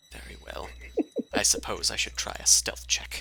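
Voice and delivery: unvoiced whispering.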